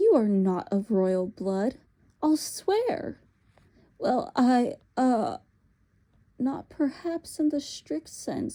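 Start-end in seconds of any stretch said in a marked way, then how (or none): 4.0-8.5 faltering, halting, stammering over words. Narrator reading Uncle Andrew's answer to the witch, stammering. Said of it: "stammered Uncle Andrew".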